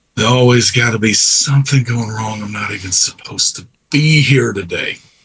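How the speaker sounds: muttering to himself under his breath. Introducing a Colonial Marine character back from leave, he speaks under his breath. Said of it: "he just under his breath says".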